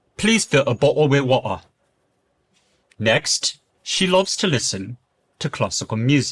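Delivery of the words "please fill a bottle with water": Multicultural London English accent. Giving accent example sentences on an educational channel, Multicultural London English accent. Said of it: "Now in MLE, this will sound more like".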